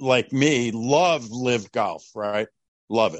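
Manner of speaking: sarcastic tone. Asking a guest whether they love live golf: sarcastic. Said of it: "A little sarcasm there, right?".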